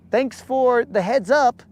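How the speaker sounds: high, overly polite tourist voice.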